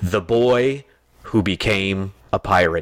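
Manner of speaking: menacing, ominous and sinister delivery. Showing another way to say the same line; sinister tone. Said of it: "I'm using a more sinister tone and saying".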